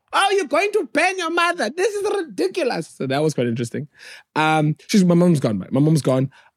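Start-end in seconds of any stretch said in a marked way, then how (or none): 0.1-2.9 very high put-on outraged voice. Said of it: "So blacks were like".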